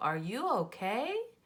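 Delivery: pitch climbs on okay, question-like lilt. Teaching punctuation by reading a question aloud: rising pitch on okay. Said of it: "did you hear my voice go, ... Because I'm asking a question".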